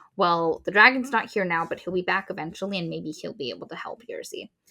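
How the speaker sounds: plain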